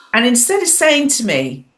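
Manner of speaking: ordinary talk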